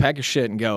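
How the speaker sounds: plain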